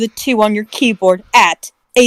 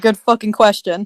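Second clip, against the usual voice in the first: plain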